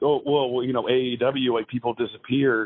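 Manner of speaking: usual speaking voice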